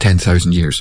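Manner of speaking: plain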